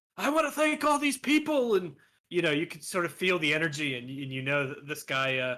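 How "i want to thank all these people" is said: put-on hyped excited Irish accent, much higher. Retelling a fighter thanking people on the mic after a win, imitating hyped fighter, irish accent. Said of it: "Was that an Irish accent?".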